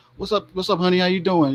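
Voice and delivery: mock sarcastic come-on tone. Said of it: "I'm just being sarcastic".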